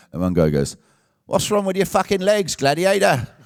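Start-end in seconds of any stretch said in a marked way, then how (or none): 1.3-3.3 put-on high-pitched English accent. Retelling how one guy yelled at him from the crowd: imitating an english accent. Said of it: "one English voice cuts through the crowd".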